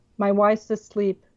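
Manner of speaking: plain reading voice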